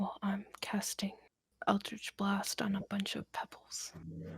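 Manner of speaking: hushed, soft whisper.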